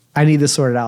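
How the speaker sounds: ordinary talk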